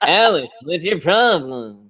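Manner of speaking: put-on nasal monotone voice. Mocking an actor playing a therapist, imitating a nasal monotone voice. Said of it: "he's really nasal ... very mono- like monotone".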